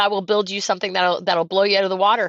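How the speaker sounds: ordinary delivery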